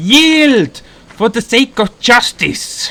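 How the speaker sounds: loud, high, heroic battle yell.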